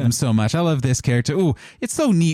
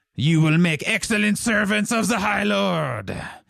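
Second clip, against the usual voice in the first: pitched-up voice, rasping; 8 semitones higher than usual. Voicing the High Overlord addressing the adventurers from his mount: High Overlord voice. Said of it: "has stepped up to you on his giant mount and has said".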